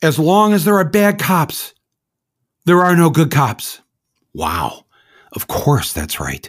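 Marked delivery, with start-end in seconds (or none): 0.0-3.8 play-acted, high-pitched, called-out shout. Retelling what an arrested kid on TV shouted: imitating someone shouting. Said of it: "And then he shouts".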